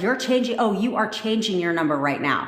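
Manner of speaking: mock angry, pissed-off, insistent, full of backbone. Retelling a command given to a partner over the phone: retelling own pissed-off command. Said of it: "a totally pissed off attitude".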